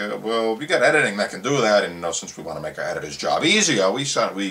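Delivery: normal talking voice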